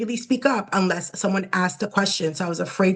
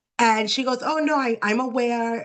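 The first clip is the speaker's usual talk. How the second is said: normal talking voice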